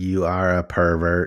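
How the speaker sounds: slow, deliberate put-on robot machine voice. Picturing an image-generating robot scolding the user: imitating a robot. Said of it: "I just picture a robot just being like".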